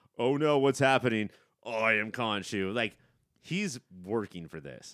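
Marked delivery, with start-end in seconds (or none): 0.2-2.7 demonic character voice. Retelling an actor's character being taken over: imitating Oscar Isaac taken over by Khonshu. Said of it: "has Khonshu take over".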